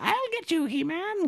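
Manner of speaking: ridiculous high-pitched villain voice. Talking with co-hosts about a skull that recalls Skeletor: ridiculous Skeletor voice. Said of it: "kind of ridiculous voice".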